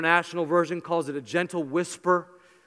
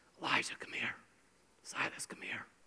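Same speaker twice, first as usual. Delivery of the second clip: little, soft whisper; 7 semitones lower, 16 dB quieter than usual. Speaker shows how he calls his boys across the room, in a whisper. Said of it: "i will give a little whisper across the room".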